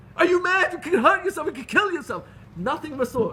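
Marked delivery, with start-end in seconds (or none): 0.2-2.3 high-pitched, loud, angry scolding scream. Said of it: "she was gonna scream at me".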